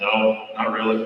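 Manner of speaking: low, soft, straight-faced deadpan. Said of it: "just looked at that straight face and goes".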